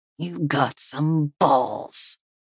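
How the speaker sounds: low, slow, drawn-out, half-whispered hiss. A man threatens the person in front of him, hissed in a low half-whisper. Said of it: "he hissed in a low whisper".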